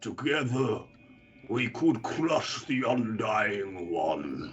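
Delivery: huge, massive rumbling voice calling out. A game master voices an unseen voice calling out to the players, massive rumbling voice. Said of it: "you hear this massive rumbling voice call out".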